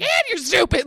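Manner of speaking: acted-out, fed-up, high yelled insult. Retelling mom going in during an argument: imitating mom yelling. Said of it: "so sick of her yelling at me".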